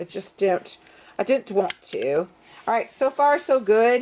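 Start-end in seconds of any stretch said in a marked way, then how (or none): 0.0-2.3 slipping into a put-on British accent. Stapling down a craft project, the speaker slips into a british accent. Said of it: "here comes my British accent".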